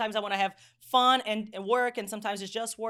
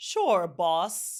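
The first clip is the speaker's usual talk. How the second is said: put-on, mocking, sarcastic jab; 3 semitones lower than usual. Retelling an employee's reply that mocked the boss: imitating a mocking tone. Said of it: "He mocked my power".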